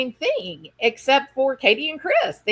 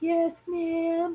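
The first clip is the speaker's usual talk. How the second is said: mock meek little-girl voice, higher and quieter; 5 semitones higher, 7 dB quieter than usual. Retelling a TV interview answer, imitating a meek little-girl voice. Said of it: "She's being very meek".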